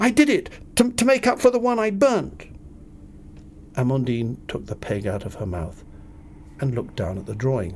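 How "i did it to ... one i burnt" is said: breathless cry, very high pitched. Waving a drawing at a woman by the washing line, cried breathlessly. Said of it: "I cried breathlessly".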